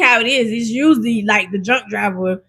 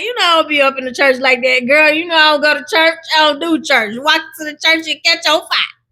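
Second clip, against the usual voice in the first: put-on higher-pitched older-lady way of talking; 5 semitones higher than usual. Retelling what a lady told grandma, imitating her voice. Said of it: "that's how that lady sounds".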